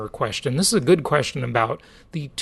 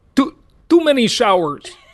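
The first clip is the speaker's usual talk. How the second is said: put-on Croatian accent; 8 semitones higher, 5 dB louder than usual. Retelling what the boat skipper said: imitating a Croatian accent. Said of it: "like in his sort of Russian, Croatian accent".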